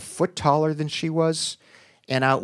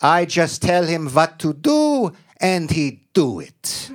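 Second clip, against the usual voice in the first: put-on heavy Hungarian accent, laid on thick; 3 semitones higher, 4 dB louder than usual. Quoting his grandmother describing her late husband, in a thick Hungarian accent. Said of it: "in her thick Hungarian accent".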